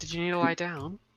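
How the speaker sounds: squeaky, high-pitched lady character voice. Voicing a lady asking if someone needs to lie down: high-pitched voice. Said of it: "I just gave her a high-pitched voice".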